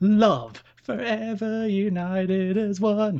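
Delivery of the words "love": extra emphasis punched onto the word love. Showing the other speaker how to deliver the phrase, with more oomph on 'love'. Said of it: "You need to give more oomph into your love".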